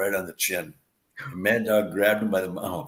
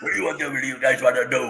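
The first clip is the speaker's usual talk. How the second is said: put-on wrestler voice, knocked-out teeth, higher; 5 semitones higher, 4 dB louder than usual. Describing an old wrestler's looks, then imitating Mad Dog's voice. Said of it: "he sounds like this".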